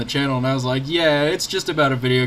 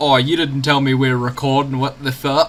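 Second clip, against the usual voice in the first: silly, put-on British accent played for laughs. Quoting the other speaker's reaction to being recorded, in a silly mock British voice. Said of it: "make me British?".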